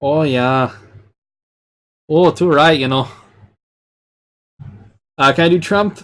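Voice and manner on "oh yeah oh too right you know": bad, fumbling, half-known Canadian accent. Answering a chat request with an attempted Canadian accent: bad Canadian accent. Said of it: "I don't know a Canadian accent".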